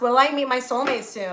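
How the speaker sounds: ordinary delivery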